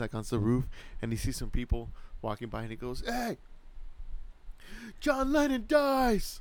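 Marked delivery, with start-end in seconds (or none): 3.1-6.4 put-on acted tipsy voice, very high, slow dragged-out drawl. Retelling a movie scene where a drunk character shouts from a roof: imitating a drunk character. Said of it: "all drunk".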